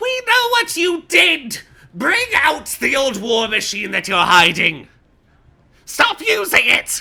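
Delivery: very loud, high, shrill yell. Voicing a Namir holding a long sign high: yelling. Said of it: "you hear him yelling".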